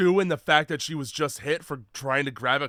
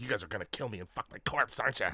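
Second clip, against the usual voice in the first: put-on cranky old woman voice, sassing with attitude; 6 semitones lower, 11 dB quieter than usual. Retelling a movie scene, imitating a senile old lady with attitude. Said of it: "this senile old bat sitting at the top of, like, stairs being like".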